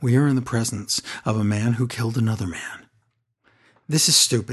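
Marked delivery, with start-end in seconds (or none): 0.0-2.6 acted, grave, solemn, somber announcer voice. Retelling what wrestling commentators said: imitating somber commentator voice. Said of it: "The commentators do somber voice".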